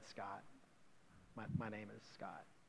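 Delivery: put-on sheepish manner. Recounting telling a man his own name, the speaker retells saying it sheepishly. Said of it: "I kind of sheepishly said".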